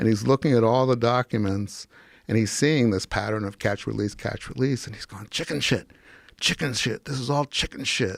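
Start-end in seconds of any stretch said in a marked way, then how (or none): 5.3-8.2 put-on voice of a very ill man. Retelling what a sick attorney said over documents: imitating a sick man's voice. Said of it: "he talked like this".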